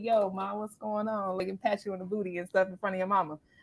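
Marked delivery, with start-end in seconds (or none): 0.0-1.4 put-on slick, easy, smooth bad-boy voice. Acting out the edgy guy you bring home: imitating a smooth guy. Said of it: "the other dude is like".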